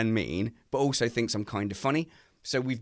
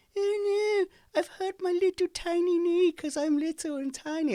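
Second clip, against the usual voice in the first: put-on upset voice, higher pitch, slower. Speaker mimics her when she's upset about her knee: mock-upset impression of her. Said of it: "I do like an impression of her".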